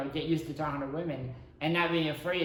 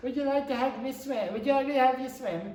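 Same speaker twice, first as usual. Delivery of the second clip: very high, terrible put-on European accent; 9 semitones higher than usual. Retelling meeting a European girl at seventeen, the speaker does a terrible European accent. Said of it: "Which is a terrible European accent".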